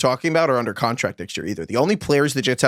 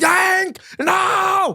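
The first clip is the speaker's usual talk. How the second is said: mock, very high, full-on screaming.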